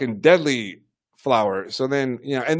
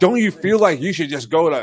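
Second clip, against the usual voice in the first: mock, acted-out yelling; 2 semitones higher than usual. Retelling how a man yelled at someone, acting out the yell. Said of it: "he's like fucking yelling at him".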